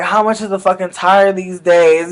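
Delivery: ordinary delivery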